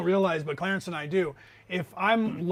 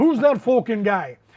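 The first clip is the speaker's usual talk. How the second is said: put-on loud, belted-out Irish accent; 4 semitones higher, 8 dB louder than usual. Describing a fighter's famous line, doing a Conor McGregor Irish accent. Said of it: "because of his Irish accent, he he talks like that".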